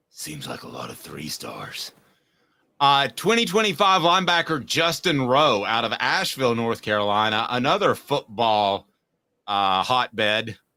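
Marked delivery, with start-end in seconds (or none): 0.2-2.0 deep, hushed, quiet superhero voice. Doing a bit with a co-host about a football player, Batman voice. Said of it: "Batman would say".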